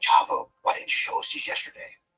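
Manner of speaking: rough, rasping voice, very high and loud. Retelling how Johnny reacted when you showed him Chris's texts, in Johnny's raspy voice. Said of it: "his raspy voice".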